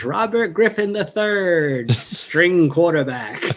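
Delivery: acted, jeering, slow, drawn-out heckling chirp. Retelling Greg's best chirp at a football game: imitating Greg's heckling chirp. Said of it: "The best chirp Greg ever had".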